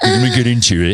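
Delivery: put-on British accent. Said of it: "that's a British man".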